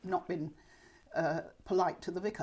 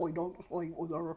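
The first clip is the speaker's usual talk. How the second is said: put-on Cornwall accent. Recalling old recordings heard at lunchtime, reproducing a Cornish accent. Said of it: "I can still reproduce it".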